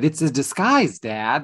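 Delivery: put-on little-kid voice. Quoting a line reading from Cybill, said like a little kid. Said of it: "she said it like a little kid".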